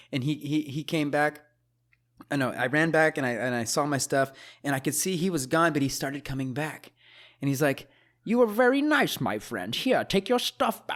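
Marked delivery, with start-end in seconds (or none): 8.2-10.9 put-on, very high, swooping, strange voice. Retelling what a guy said when he came back with the speaker's stuff, weird voice. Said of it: "with this weird voice".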